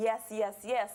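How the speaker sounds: ordinary delivery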